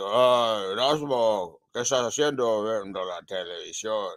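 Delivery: harsh, disguised, low, slow, menacing voice. Retelling what a caller said on the phone, in a put-on menacing, harsh, hidden voice. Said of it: "in a menacing, harsh, hidden voice".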